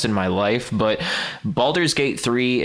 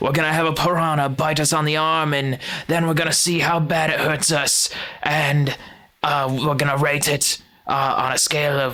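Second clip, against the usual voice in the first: pitched-up put-on Australian accent throughout; 5 semitones higher than usual. Retelling two animal experts planning a piranha bite, imitated australian accent. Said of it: "I only said it like that because one of them's Australian".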